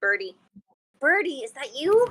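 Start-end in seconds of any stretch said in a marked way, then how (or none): 1.0-2.1 whisper, higher. Whispering through a door to a barking creature: whispering through a door. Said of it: "whisper through the door and say".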